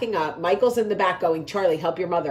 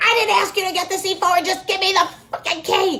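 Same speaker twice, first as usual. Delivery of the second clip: shrill, very high-pitched screaming; 13 semitones higher, 3 dB louder than usual. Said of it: "Only I was screaming for a room key".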